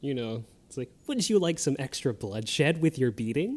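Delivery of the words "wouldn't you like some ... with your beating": mock charming, delighted, sweet-voiced tone. Quoting a game character's line in a very delightful voice. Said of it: "she says it in a very delightful voice".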